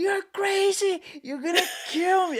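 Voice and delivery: put-on loud, very high, dramatic kid's yell. Retelling a childhood visit to the dentist: imitating a child yelling loudly. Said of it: "I started yelling. I, like, I never yelled so loud".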